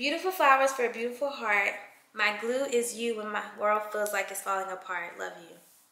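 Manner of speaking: usual speaking voice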